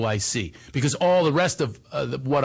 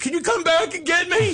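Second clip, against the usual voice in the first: mock, shrill, very high, desperate-sounding yell. Retelling calling out to an ex-wife to come back for them: retelling a yell. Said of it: "I'm yelling".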